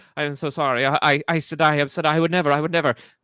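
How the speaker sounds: flustered groveling. Voicing a circus character who just recognized the player: flustered groveling apology. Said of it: "he's just like, doesn't know what to do".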